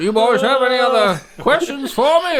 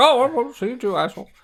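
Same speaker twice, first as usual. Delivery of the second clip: sour, low grumble muttered under the breath. Voicing a character saying goodbye to a player: muttered quickly under his breath. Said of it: "he said it quickly under his breath".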